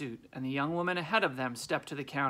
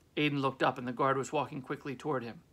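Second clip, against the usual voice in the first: plain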